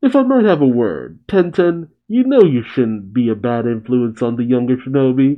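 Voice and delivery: ordinary talk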